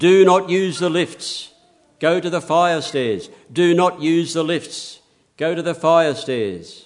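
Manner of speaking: loud, high intercom announcer voice. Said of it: "a voice comes over the intercom".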